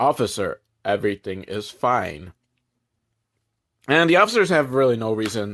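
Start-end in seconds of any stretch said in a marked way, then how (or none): 0.0-2.3 level, flat, toneless drone with no lift. Imitating how they answer the officers, in monotone. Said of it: "they do speak like that monotone".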